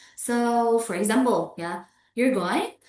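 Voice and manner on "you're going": rising intonation lifting at the end of going. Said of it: "rising intonation ... a questions".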